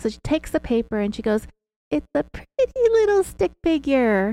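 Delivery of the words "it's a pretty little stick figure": put-on high, swooping, slow baby-talk voice. Retelling what she said while drawing: imitating Sherry's pitchy baby talk. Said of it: "her baby talk and her pitchy voice".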